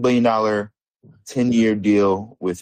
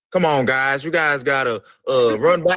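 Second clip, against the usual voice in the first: higher-pitched put-on country accent. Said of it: "give us a [name] impersonation".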